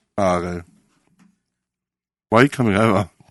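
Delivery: talking with mouth full. Someone comes over while the speaker is eating; talking with mouth full. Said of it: "I've got a mouthful of food".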